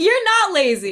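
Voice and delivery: speaking through laughter. Reassuring another speaker who said not to laugh, laughing while talking. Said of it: "I'm laughing".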